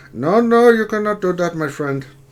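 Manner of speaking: put-on Indian call-centre accent. Describing the one accent a person always does: Indian telemarketer voice. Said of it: "it's always in the Indian telemarketer voice".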